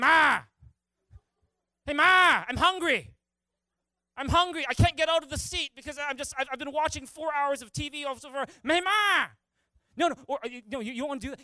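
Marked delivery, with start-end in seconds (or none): 0.0-9.3 put-on lazy holler, higher and louder. Addressing the young guys in the crowd, imitating a lazy son hollering. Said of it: "Or are you more like".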